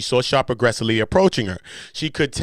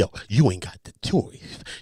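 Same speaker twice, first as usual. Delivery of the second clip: put-on lisping voice, lower pitch; 7 semitones lower, 3 dB quieter than usual. Reading out the lawsuit's claims, quoting Shannon Sharpe: Shannon Sharpe voice with a lisp. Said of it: "anytime I talk like Shannon, I make sure I go into the lisp".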